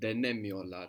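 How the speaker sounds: Denemiyorlar with heavy stress on ne. Turkish pronunciation lesson, stress before the negation: strong stress on 'ne' syllable. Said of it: "that strong accent before the negation".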